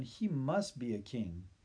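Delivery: plain reading voice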